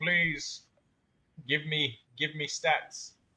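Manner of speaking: mock begging through tears, slow and drawn-out. Imitating a game character begging for stats: mock crying as Nahida. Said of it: "Nahida over here is crying, like".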